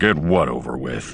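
deep rumbling growl, very low. Walking to their quarters, Han answers Lando's question, growled. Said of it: "Han growled".

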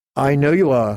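plain reading voice

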